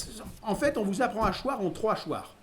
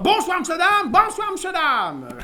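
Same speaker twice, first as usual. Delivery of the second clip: parrot voice, much higher and louder, shouting; 11 semitones higher, 7 dB louder than usual. Describing a father's clown fall routine, shouting in a parrot voice. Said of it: "en criant d'une voix de perroquet".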